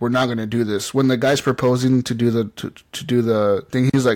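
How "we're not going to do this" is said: ordinary talk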